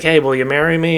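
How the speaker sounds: playful, put-on joking tone. Recapping a film, the speaker quotes Bond's line to Vesper, retelling a joking line. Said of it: "And Bond jokes like".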